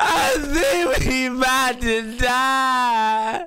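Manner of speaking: panicked crying. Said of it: "I'm panicking again".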